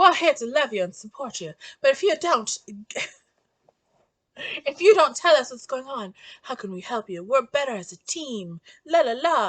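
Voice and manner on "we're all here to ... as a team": put-on Charleston, South Carolina accent. Summarizing a book, the speaker voices characters urging Melanie to open up: attempted Charleston accent. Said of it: "I'm trying to do a Charleston accent".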